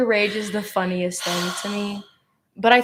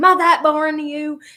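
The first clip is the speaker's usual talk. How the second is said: put-on loud, shrill, furious scolding voice; 7 semitones higher, 5 dB louder than usual. Retelling a teacher who got furious over yawning: imitating a furious teacher. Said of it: "she'd get so furious".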